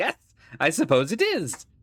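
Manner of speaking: slow, wicked, chuckling villain voice, laughing through words. A narrator voices a man with an evil smile answering a question: evil laugh while talking. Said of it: "he begins to laugh".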